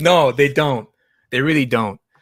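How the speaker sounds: sarcastic, loud delivery. Agreeing with the other speaker's doubt: sarcastic tone. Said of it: "I say that with such a sarcastic tone".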